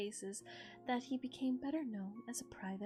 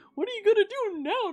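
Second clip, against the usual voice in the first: silly goofy voice, higher and louder; 10 semitones higher, 16 dB louder than usual. Showing how a game character sounded in imagination: stupid goofy voice. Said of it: "really stupid and goofy".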